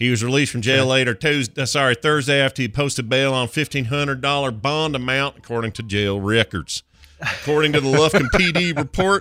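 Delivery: put-on Texas accent. Speaker reads a news report aloud, doing a put-on Lufkin, Texas accent. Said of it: "I'm going to do it in the accent of the place".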